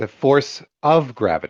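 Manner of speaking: of stressed, lifted in pitch. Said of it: "I highlighted the word of".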